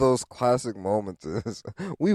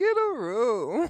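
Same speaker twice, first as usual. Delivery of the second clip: put-on very high older lady voice; 12 semitones higher, 4 dB quieter than usual. Retelling how an older lady told them to get a room: imitating an older lady. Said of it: "so she said it like".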